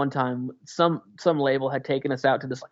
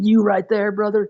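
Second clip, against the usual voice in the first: horribly sleazy, schmoozing hustler tone, pitched up; 6 semitones higher, 6 dB louder than usual. Retelling how an old guy in an office talked: imitating sleazy talk. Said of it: "talking in these really horrible sleazy lingo".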